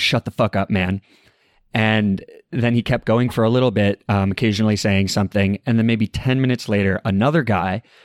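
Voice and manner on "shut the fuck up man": normal talking voice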